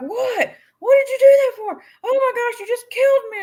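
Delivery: very high, frantic shriek. Telling Patty how the son acts while gaming, retelling son's screaming. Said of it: "he's screaming at the top of his lungs".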